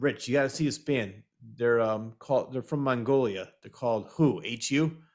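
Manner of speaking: ordinary talk, nothing marked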